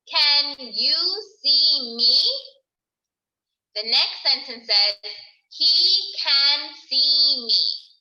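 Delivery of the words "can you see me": rising, asking lilt lifting on me. Reading a worksheet sentence aloud in a sight-word lesson, with question intonation. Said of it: "I had to change my voice to ask a question".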